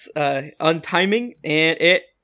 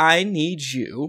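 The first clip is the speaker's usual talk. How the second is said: normal talking voice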